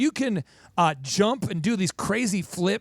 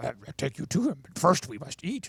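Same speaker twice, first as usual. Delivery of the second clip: soft, hushed, quirky, squirrely little drawl; 6 semitones lower, 5 dB quieter than usual. Retelling a film scene where Yoda answers Luke: Yoda voice. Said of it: "Yoda's kinda squirrely".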